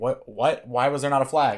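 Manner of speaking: plain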